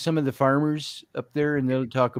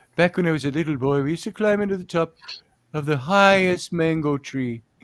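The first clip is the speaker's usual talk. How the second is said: put-on Hawaiian-accented commentator voice; 2 semitones higher than usual. Imitating a fishing show commentator for another speaker: hawaiian accent. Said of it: "Snapper Pro, commentator. Oh, Hawaiian".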